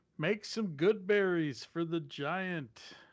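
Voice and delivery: yelling in a put-on voice. Calling out in character across a fight toward a giant: yelling in character. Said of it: "I'm gonna yell out".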